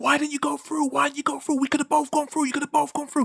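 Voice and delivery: shrill yelling pitched very high. Telling a story about a driver who had to brake hard, retelling someone yelling. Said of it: "they were just yelling at him".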